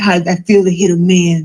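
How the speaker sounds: normal talking voice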